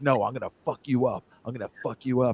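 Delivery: acted, hushed, menacing whisper. Retelling what the head of HR said to the speaker, imitating her whisper. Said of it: "and she's whispering this".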